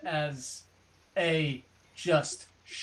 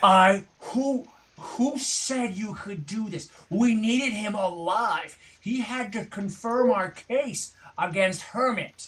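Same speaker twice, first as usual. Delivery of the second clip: full-throated, high-pitched, furious top-of-lungs screaming; 6 semitones higher, 4 dB louder than usual. Narrator voicing a character coming around the wall with another: screaming at the top of lungs. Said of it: "screaming at the top of his lungs".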